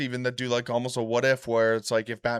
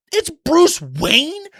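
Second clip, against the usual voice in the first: put-on very high, very loud, shrill shout of furious disbelief; 10 dB louder than usual. Retelling a cartoon scene where Joker learns Batman's identity: imitating Joker getting mad. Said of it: "He gets all mad".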